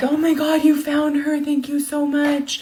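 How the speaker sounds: put-on tearful hysterical gushing. Retelling how her mom came out on the porch thanking an officer, imitating hysterical crying.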